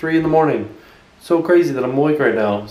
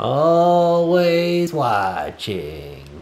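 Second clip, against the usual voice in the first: poorly done monster voice, always drawn out. Chatting about Netflix with the group, doing a Roz impression. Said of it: "That was like my worst impression of Roz ever".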